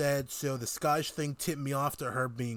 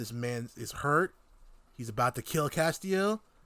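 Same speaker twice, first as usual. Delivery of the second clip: ordinary delivery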